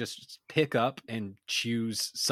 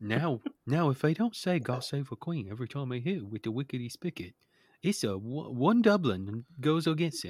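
put-on English accent. Joking about a made-up English sport: Michael Caine voice. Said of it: "Is this Michael Caine doing this?".

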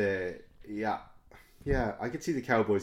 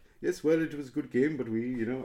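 clumsy, terrible put-on South African accent; 4 semitones higher than usual. Retelling what a South African guy said to an American guy, terrible South African accent. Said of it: "that was a terrible South African accent".

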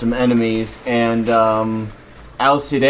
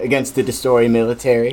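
usual speaking voice

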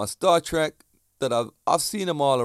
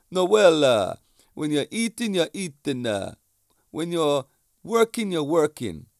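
clumsy put-on Italian accent, one word drawn out; 3 semitones higher than usual. Quoting what a food-loving man told him, bad italian accent. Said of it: "my bad Italian accent".

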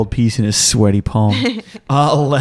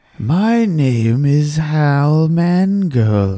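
very slow, plain, homespun everyday speech; 3 semitones higher than usual. Copying another player's way of talking after being told to talk like common folk. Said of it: "if you wanna talk like a common folk, talk like me".

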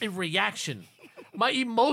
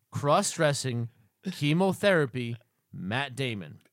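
very slow, low, deliberate, each item spaced out; 7 semitones lower than usual. A podcast host repeats a phrase for listeners who can't scroll back, saying it slowly. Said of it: "I'll say it again slowly".

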